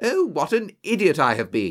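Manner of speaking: abrupt, sudden cry all at once. The narrator exclaims after suddenly remembering an earlier error: exclaiming. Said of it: "I exclaimed".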